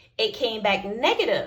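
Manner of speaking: ordinary talk, nothing marked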